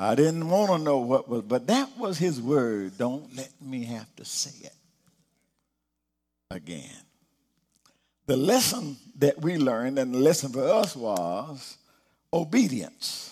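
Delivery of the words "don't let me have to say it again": put-on whisper, lower and quieter. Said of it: "rarely spoke above a whisper".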